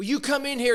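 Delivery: angry, high, indignant yelling rant. Act out a professional turning on a reporter in an interview, imitating someone yelling. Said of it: "he starts yelling at him".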